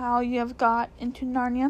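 ordinary delivery

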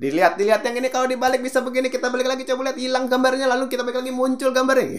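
high, fast pitchman sales patter.

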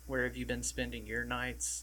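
normal talking voice

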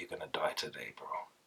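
barely audible whisper, very close in. Telling how a mate once leaned in to whisper in their ear: retelling a whisper in the ear. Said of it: "he whispered in my ear one time".

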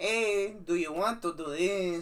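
very loud, high, exaggerated Spanish accent.

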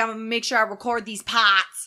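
put-on strong Boston accent, laid on. Speaker quotes a man who barely talks, strong Boston accent. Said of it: "The strongest Boston accent I've ever heard".

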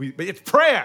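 sudden, very loud, full-throated yell. Making a point to another speaker in conversation, yelling. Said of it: "I didn't mean to yell".

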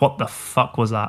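ordinary talk, nothing marked

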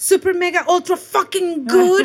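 put-on excited gush. Retelling how a line cook answers a greeting: imitating an excited line cook. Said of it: "so excited. He's like".

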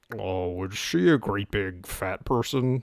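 low, very slow voice, every word drawn out. Joking that a honey throat recalls a film villain: Buffalo Bill voice. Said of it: "It makes you think of Buffalo Bill".

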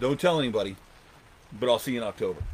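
ordinary delivery

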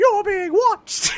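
squeaky, very high cartoon voice. Recapping a show scene, voicing the machine in a Mickey Mouse voice. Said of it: "The machine is Mickey Mouse!".

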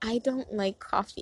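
normal talking voice

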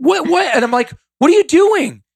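loud high-pitched yelling.

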